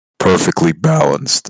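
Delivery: loud voice breaking mid-phrase. In a group conversation about Lola Bunny, voice cracking. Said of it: "I had a voice crack".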